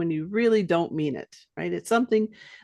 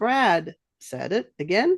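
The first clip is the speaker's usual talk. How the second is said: plain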